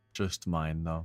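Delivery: soft, downcast, mournful little aside. Commenting to another player during a game, sounding sad. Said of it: "why'd you sound so sad that time".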